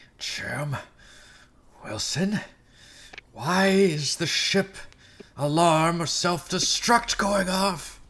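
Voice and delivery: very high, forced through clenched teeth. Role-player's character confronting another character over an alarm, through gritted teeth. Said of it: "through gritted teeth".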